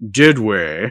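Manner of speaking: quizzical, puzzled tone in a character voice. Quoting a favourite movie moment: imitating the Chamberlain's "Did we?". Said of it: "the way he says, "Did we?"".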